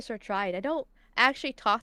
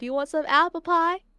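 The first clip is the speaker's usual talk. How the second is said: fake Southern belle accent, higher, louder; 7 semitones higher, 7 dB louder than usual. Asked to do the Texas accent, playing a Southern belle in a Southern belle accent. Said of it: "I'm a Southern Belle".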